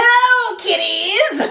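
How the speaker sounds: shrill, very high, creepy, ghoulish horror-host voice. Starting a narration in a creepy voice: creepy Crypt Keeper voice. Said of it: "You can't do a Crypt Keeper".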